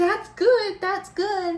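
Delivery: put-on soothing tone, high and loud.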